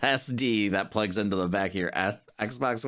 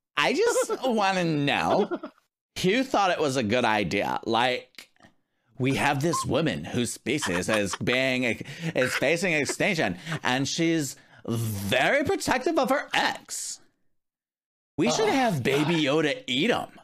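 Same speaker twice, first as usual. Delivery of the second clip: put-on voice, high and swooping; 5 semitones higher than usual. Reading someone's post aloud on stream, in a put-on voice of its writer. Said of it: "what I assume is this person's voice".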